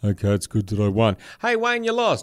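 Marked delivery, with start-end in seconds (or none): 0.0-1.2 flat, droning monotone with no inflection. Imagining Wayne Bennett's reply at a press conference: Wayne Bennett monotone. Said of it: "And he'd go".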